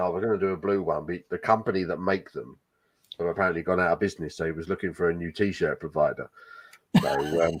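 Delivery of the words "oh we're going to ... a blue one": ordinary delivery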